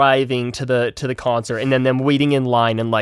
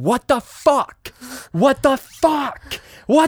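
very high, rising, panicked, drawn-out yell; 13 semitones higher than usual. Retelling how a woman can't get something off: retelling her yelling. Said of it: "she just starts yelling".

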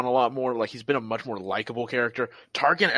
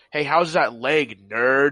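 put-on cocky, taunting soldier voice; 3 dB louder than usual. Imagining Hunter meeting Darth Vader, mocking him: cocky Hunter taunt. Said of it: "the Bad Batch being just a little too cocky".

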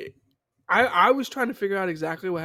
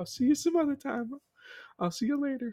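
put-on crying film voice, higher and quieter; 6 semitones higher, 5 dB quieter than usual. Retelling a film's ending scene: imitating Demi Moore's character crying.

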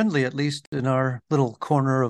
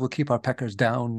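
ordinary delivery

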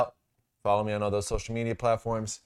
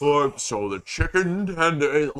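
put-on thick-sounding announcer voice, much slower pace; 5 semitones higher, 4 dB louder than usual. Mocking the voice in the advertisements, doing a fat-sounding ad voice impression. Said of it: "the voice in the advertisements sounds fat".

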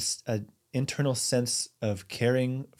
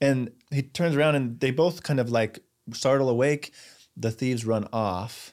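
ordinary talk

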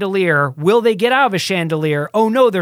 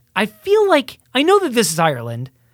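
ordinary delivery

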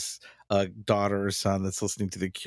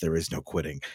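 put-on, super serious voice, pitched lower; 4 semitones lower than usual. Retelling a dad's line from Malcolm in the Middle: Bryan Cranston's super serious tone. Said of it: "gets super serious and says".

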